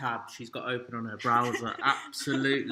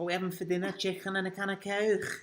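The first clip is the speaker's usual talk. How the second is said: high, put-on Scouse Liverpool accent; 7 semitones higher than usual. Two speakers try talking like scouts from liverpool, in a put-on liverpool accent. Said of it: "like scouts from Liverpool".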